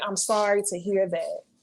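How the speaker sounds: ordinary talk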